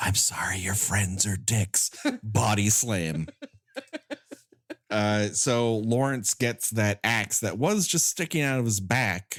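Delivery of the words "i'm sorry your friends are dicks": close, low, secretive half-whisper into an ear. Recapping a scene where one character speaks to another: half-whispering into his ear. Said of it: "He whispers in into his ear".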